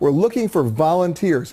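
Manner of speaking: slow, with hard stress on volunteers.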